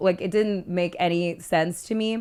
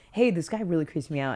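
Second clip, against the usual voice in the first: put-on blunt no-nonsense tone; 3 dB quieter than usual. Retelling what a blunt friend said about a creepy man: imitating a blunt friend. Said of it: "no bullshit about it".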